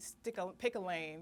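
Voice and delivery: ordinary delivery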